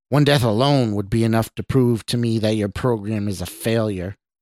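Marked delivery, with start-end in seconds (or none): none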